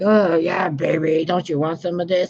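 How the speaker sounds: high-pitched, leering, sleazy-guy voice. Mocking crude men who hit on women: imitating a sleazy man. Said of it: "these guys with their fucking fat ass bellies".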